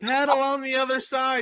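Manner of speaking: mock shout, pitched way up, very high. Stuck paddling in circles in a canoe, the speaker recreates yelling instructions. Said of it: "I'm sitting there yelling".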